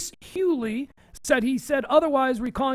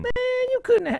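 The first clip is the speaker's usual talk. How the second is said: put-on very high old man voice; 11 semitones higher than usual.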